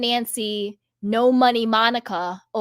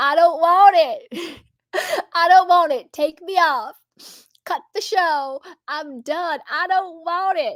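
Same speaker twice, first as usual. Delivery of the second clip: high, tearful, sobbing, crying voice; 6 semitones higher than usual. Retelling a meme of a man on a talk show: imitating a man crying. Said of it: "he's crying".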